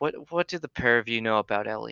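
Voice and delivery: quick, shady, shifty, suspicious, furtive tone. A man approaches the pair, looks around both sides, and asks: shady tone. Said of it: "in, like, a very shaded tone".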